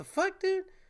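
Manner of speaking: very high, incredulous, disbelieving squeak.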